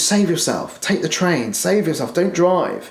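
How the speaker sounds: acted-out, fast, rattled-off, high, panicked voice. Retelling an inner voice warning against driving: imitating a fast panicked voice. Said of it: "talking fast".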